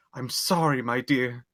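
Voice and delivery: heartfelt, tender, slow apologetic tone. Voicing Ashu, holding someone's face and apologizing.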